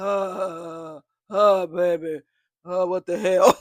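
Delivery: groggy, loud, drawn-out groaning on the uhs. Retelling a dazed man waking after a slap: groggy Frankenstein-like groan voice. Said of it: "He sound like damn Frankenstein".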